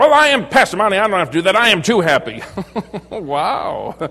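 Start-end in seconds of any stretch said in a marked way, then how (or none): 0.0-2.4 testy, irritable tone. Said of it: "Little testy, aren't we".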